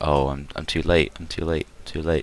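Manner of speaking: sad, crestfallen voice, soft, flat, deflated murmur. Voicing a character who learns he arrived too late: sad and deflated NPC voice. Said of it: "he just kind of looks sad".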